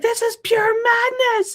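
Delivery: very high, terrified shriek. Voicing a character on the stairs as a creature approaches: screaming in fear. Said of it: "she just screams like".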